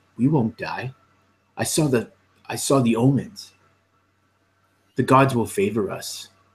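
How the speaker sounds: very serious, grave tone. Voicing a character answering a companion about dying: very serious. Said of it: "he gets this really serious looks on".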